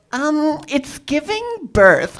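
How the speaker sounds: Gen Z slang-style delivery. Showing the crowd an impression still in the works: Gen Z nurse impression. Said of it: "this is my impression of a Gen Z nurse".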